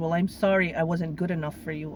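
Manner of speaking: plain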